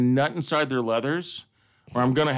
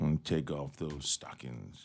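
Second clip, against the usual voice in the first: very deep, soft, hushed, smooth and suave voice; 10 semitones lower, 13 dB quieter than usual. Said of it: "all like smooth and suave".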